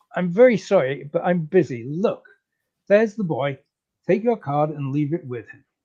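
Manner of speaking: ordinary talk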